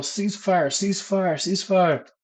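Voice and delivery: high-pitched drill sergeant shout, called out loudly.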